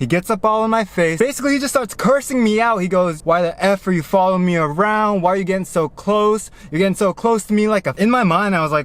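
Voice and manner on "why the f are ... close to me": plain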